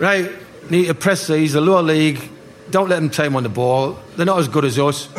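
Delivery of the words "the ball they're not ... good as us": ordinary talk, nothing marked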